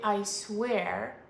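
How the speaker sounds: normal talking voice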